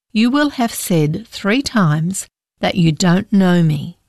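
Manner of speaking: plain reading voice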